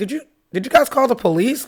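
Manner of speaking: incredulous tone, high and loud. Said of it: "And I'm like".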